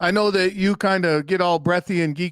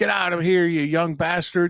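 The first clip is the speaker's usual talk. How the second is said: put-on grumpy old man voice. Retelling a movie scene where a grumpy old man dismisses a visitor: imitating a grumpy old man. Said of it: "he's a grumpy old man".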